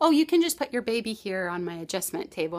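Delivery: normal talking voice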